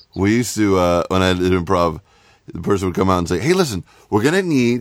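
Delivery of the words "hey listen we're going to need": mock very happy host voice, higher. Retelling an improv host asking the crowd for suggestions: imitating a very happy improv host. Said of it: "you're always very happy at doing improv".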